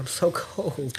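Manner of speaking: put-on shivering voice. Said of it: "legit was, like, shaking".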